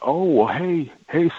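fake, very high, overly cheery and gushing voice.

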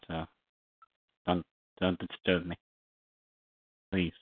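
speaking with food in mouth. Interrupted by others mid-conversation, talking while eating. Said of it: "I'm eating".

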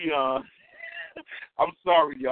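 talking through laughter, pitch swooping. Apologizing to listeners mid-show, laughing while talking. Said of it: "I can't stop laughing".

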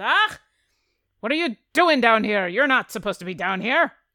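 very loud, angry, territorial shout in dwarf voice. Voicing a dwarf on a barrel shaking his pickaxe: dwarf shouting at intruders. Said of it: "and he starts to shake his pickaxe at you, and he says".

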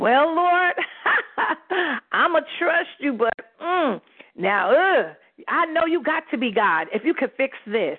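laughing, doubtful, half-believing tone.

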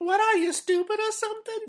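shrill, very high, loud, belted cartoonish voice. Quoting the blonde waitress calling someone stupid: Harley Quinn voice. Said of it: "how the hell she turned into, to, uh, Harley Quinn?".

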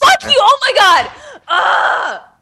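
raging, shrill, very slow, drawn-out outburst. Reacting after being told the first take was better: raging. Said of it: "Double rage".

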